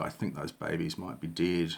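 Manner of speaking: put-on quiet mutter under breath. Retelling what the seller said after taking payment: imitating someone muttering under breath. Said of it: "quite sort of under his breath".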